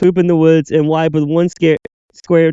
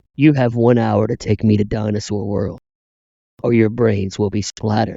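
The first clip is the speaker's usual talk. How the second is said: put-on sinister, menacing voice, lower and quieter; 8 semitones lower, 4 dB quieter than usual. Quoting an imagined sequel villain's threat: put-on sinister voice. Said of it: "it's a lot more sinister if you use his actual voice".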